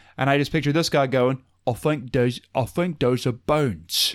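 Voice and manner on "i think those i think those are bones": slow, careful, deliberate British voice, every word weighed. Picturing what a British poster would say, Michael Caine voice. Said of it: "who I accidentally did the voice for".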